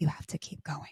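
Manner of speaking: soft, breathy, barely voiced whisper. Retelling what another person said while saging the house: imitating a whisper. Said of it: "And she whispers".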